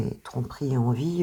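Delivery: ordinary talk, nothing marked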